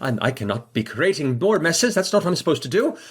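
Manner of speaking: high, hurried, fretting, flustered robot voice. Voicing a robot who dropped something and hurries: flustered robot. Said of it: "quickly go".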